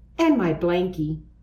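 ordinary delivery

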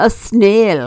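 put-on speech with a French accent. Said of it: "the man replies in a French accent".

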